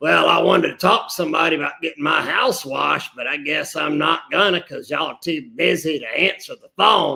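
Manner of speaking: put-on grumpy, creaky, crotchety old man grumbling voice. Retelling callers who left messages when nobody answered, mock crotchety old man. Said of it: "crotchety old bastards would sit there and like".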